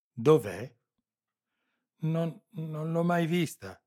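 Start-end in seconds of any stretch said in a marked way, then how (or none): 2.0-3.7 stammering, higher pitch. Narrator reads a captive answering her interrogator's question about a woman, stammering. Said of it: "balbettò l'altra".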